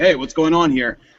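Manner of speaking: ordinary talk, nothing marked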